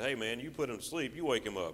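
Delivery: ordinary talk, nothing marked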